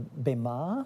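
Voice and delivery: Bema said with rising, question-like tune.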